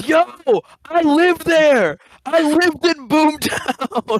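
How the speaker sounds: put-on high, slow, excited child voice yelling.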